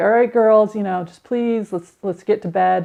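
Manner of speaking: earnest, imploring, begging, pleading tone. A mother retells what she said to her daughters at bedtime, retelling her own pleading. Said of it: "It was just pleading with them".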